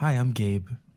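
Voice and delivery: quiet, timid delivery. Introducing yourself to the table when asked who you are: soft, shy introduction. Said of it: "That was such a soft way he said it".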